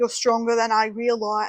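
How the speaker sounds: accidentally slipping into an Australian accent.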